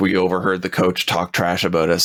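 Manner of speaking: ordinary talk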